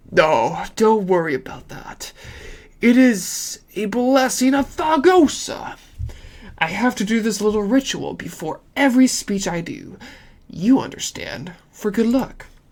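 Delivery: hushed voice. Narrator voicing Cicero, who notices the listener's suspicion, in a lowered voice. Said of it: "Cicero clears his throat and lowers his voice".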